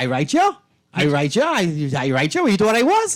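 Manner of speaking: put-on Long Island grandmother voice. Playing Grammy Sawyer when asked to speak to her: Long Island voice. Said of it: "look at that Long Island voice".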